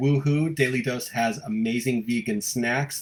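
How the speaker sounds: normal talking voice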